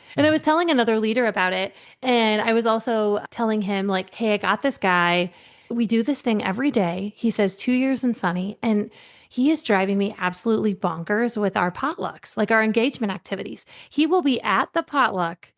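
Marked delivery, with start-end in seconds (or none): none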